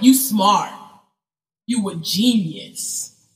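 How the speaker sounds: very slow, drawn-out hype, dripping with sarcasm. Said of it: "You're some [name]".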